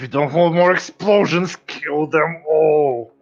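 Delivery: very high, very loud yell through gritted teeth. Role-playing a character who wants their enemies dead, yelling through gritted teeth. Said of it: "I'm gonna yell through my my teeth".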